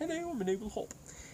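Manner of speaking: high, squeaky little talking hop voice.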